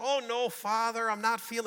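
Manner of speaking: put-on Irish accent. Telling a joke, Mary answers the priest, in an Irish accent. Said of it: "This is my Irish accent".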